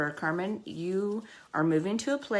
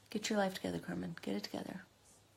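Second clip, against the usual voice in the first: choked up, fighting back tears; 3 semitones higher, 9 dB quieter than usual. Trying to keep talking after reading an upsetting email: holding back tears. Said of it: "I don't wanna cry right now".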